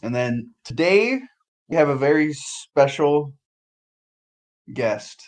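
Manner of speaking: very slow, halting delivery broken by long pauses. Introducing a very special guest: long pauses. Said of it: "I don't know why I paused so much".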